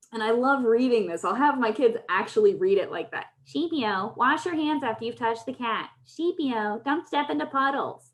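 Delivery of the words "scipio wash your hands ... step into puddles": ridiculous high, whiny, biting tone. The speaker demonstrates how they have kids read nagging lines aloud; whiny, biting tone. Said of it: "adopting this ridiculous tone".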